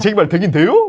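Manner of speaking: Chungcheong dialect.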